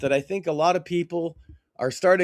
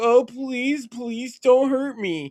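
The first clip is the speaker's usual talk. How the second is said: mock blubbering, high, tearful, pleading sob-voice; 8 semitones higher than usual. Retelling someone crying on the news: imitating someone crying. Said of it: "he's on the news crying, like".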